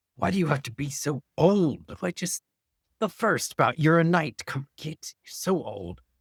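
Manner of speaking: irritable, complaining grumble. In a tabletop game, voicing Quirk tending wounds, grumbling under breath. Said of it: "Quirk is grumbling under his breath".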